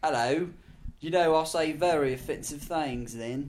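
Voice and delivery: put-on British accent. Podcast speaker trying out a put-on British accent. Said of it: "My British accent's not bad".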